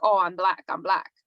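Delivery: put-on thick Spanish accent. Recalling a fellow student's running joke, imitate him in a thick spanish accent. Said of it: "in his thick, you know, Spanish accent".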